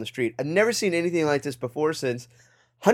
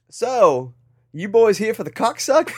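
put-on Australian accent, pitched higher; 6 semitones higher, 4 dB louder than usual. Retelling what a man asked the boys, in a put-on australian accent. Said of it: "I'll bust it out here".

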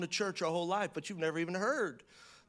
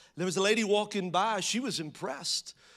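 ordinary delivery

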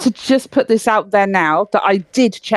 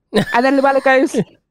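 ordinary talk

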